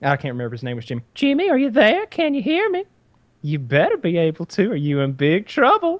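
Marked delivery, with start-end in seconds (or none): 1.1-6.0 very high voice with swooping pitch. Retelling a recorded earpiece message from the televangelist's wife: imitating the wife on the earpiece. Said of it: "And it's his wife".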